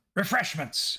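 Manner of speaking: high, mild voice calling out. Reading a story aloud, voicing a character as he shouts out: shouting. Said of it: "he shouts out".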